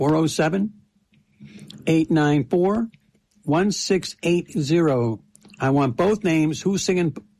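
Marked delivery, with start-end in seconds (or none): 0.0-5.2 spoken nice and slowly. Repeating the phone number again for callers, nice and slow. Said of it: "I'll say it again slow".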